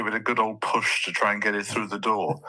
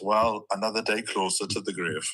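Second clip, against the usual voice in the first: normal talking voice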